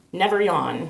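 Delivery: ordinary delivery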